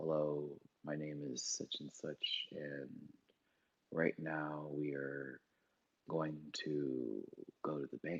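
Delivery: really low, very quiet, hushed, slow put-on voice. Describing a guy from an Adult Swim show, imitating his really low voice. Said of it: "the guy who talks really low like this".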